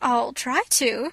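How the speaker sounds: gasping while stifling a laugh. Anne answers a correction about how a name is pronounced, gasping, holding back laughter. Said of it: "gasped Anne, choking back a wild desire to laugh".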